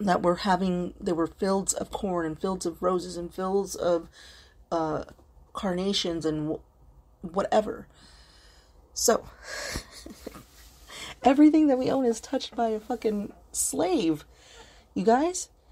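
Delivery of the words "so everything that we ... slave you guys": high, overwrought outburst, overcome with emotion. Talking to you guys about vanished farmland, getting over-emotional. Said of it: "Sorry I'm being over emotional".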